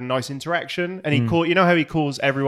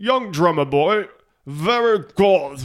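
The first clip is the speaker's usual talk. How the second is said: affected, put-on English accent; 4 semitones higher, 3 dB louder than usual. Quoting a man's praise after a drum solo, imitated english accent. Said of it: "you act like you're throwing up in an English accent".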